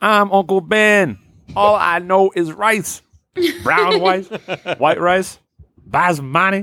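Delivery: very high, slow, drawn-out comic character voice. Retelling a sketch about canceling Aunt Jemima: imitating Uncle Ben. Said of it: "And he was like".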